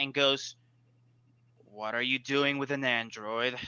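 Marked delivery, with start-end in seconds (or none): 1.6-3.6 suspicious, mistrustful tone. Voicing a character who questions the players about the android: mistrustful. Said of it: "He is mistrustful of you".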